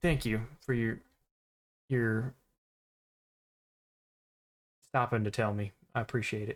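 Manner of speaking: put-on deep drawling Texas accent. Game narrator voices a character speaking to the players, in a deep Texas drawl. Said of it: "he's got this real deep like Texas drawl".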